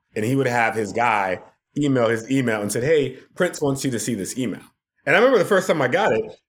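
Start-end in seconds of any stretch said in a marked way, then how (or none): none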